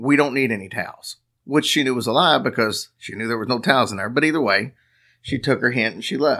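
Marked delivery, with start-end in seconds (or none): 0.0-1.2 put-on gruff male voice. Retelling a story, quoting the voice from behind the door: gruff male voice. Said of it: "a gruff voice said".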